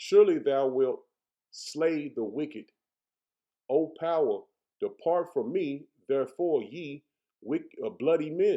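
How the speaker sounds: slow, careful, deliberate word-by-word reading. Rereading a scripture passage aloud after stumbling, reading more slowly. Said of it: "Let me slow down".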